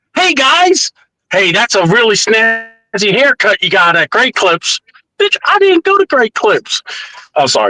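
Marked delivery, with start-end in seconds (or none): 0.2-4.8 ultimate try-hard voice.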